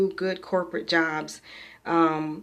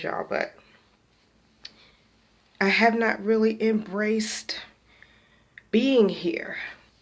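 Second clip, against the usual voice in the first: speaking through tears; 4 semitones higher than usual. Apologizing to the group for crying, the speaker keeps talking while crying. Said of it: "I'm so sorry for the tears".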